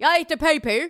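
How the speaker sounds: attempted, put-on Australian accent.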